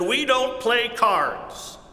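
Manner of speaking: put-on disgusted older woman voice. Retelling a woman's answer when asked about playing cards, mock-disgusted voice. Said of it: "in a disgusted voice".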